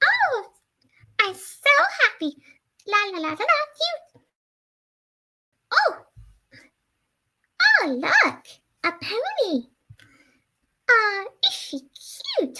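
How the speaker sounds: very high cartoon character voice, pitch swooping around. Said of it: "I can certainly do Bubbles' voice".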